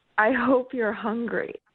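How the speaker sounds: imitated whisper. Retelling what a guy said to her in the bedroom: imitating a whisper. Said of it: "he just whispered to me".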